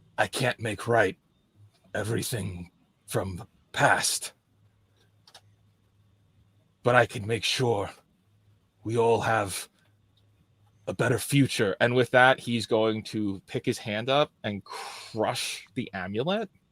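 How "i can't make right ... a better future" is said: put-on whisper under the breath, quieter. Voicing a character who quietly vows to fix the future: whispering under his breath. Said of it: "just under his breath, whispering".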